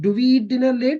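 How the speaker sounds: question intonation across the whole line. Showing how intonation marks a question, questioning intonation. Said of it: "मैं यहाँ पे जब question बोल रहा हूँ तो मेरा इंटोनेशन चेंज हो रहा है".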